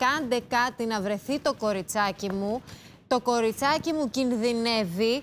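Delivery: ordinary delivery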